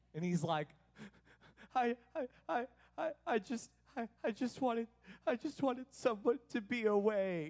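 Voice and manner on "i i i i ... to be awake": mock tearful child, higher, slow, stuttering through sobs. Retelling what a crying kid said on the couch: imitating Carson crying. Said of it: "the tears are dripping".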